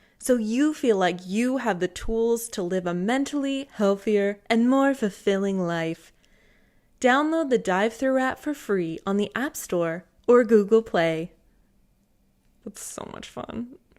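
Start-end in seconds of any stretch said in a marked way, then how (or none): 0.2-11.3 ad-read announcer voice, louder. Reading a sponsor ad aloud after announcing it: special ad voice. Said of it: "my special ad voice".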